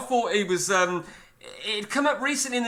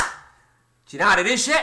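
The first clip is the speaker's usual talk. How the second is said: put-on, fake Irish accent. Asking a quick question as a joke: put-on Irish accent. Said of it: "There's my Irish accent".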